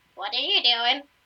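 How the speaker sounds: odd, strange werewolf monster voice. Game narrator voices a werewolf reacting to a player, squeaky werewolf voice. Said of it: "says in a squeakier voice".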